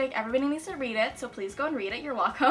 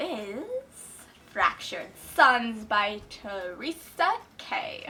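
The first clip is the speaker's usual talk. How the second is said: very slow, every word drawn out at length; 3 semitones lower than usual. Listing your reading plans for the month, say the last book very slowly. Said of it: "I just said that really slowly".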